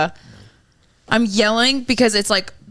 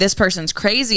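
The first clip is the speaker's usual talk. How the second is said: ordinary talk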